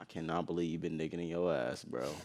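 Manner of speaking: very hushed, very low, quiet, deeply disappointed. Acting out emotions on cue, delivering the same line disappointed.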